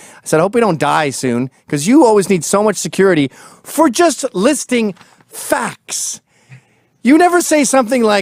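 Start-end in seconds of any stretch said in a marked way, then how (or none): none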